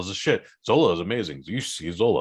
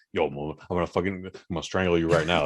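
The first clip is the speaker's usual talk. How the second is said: mock terrifying, low, dead-serious menacing tone; 4 semitones lower, 3 dB quieter than usual. Retelling an actor's sudden threat in a film: imitating a terrifying threat. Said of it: "Really terrifying performance".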